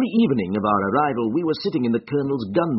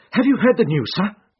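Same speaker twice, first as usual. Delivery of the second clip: shaken, breathless gasping voice, pitch high; 9 semitones higher, 4 dB louder than usual. Narrator reading; the Colonel's butler rushes in at breakfast with news, gasping. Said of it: "he gasped".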